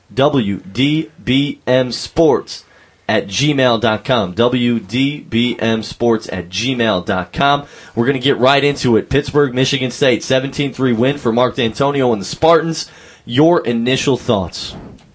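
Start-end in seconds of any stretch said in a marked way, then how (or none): 0.2-7.7 very slow, careful, letter-by-letter spelling-out. Giving out the email address for getting in touch, saying it slowly. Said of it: "I'll say it slowly".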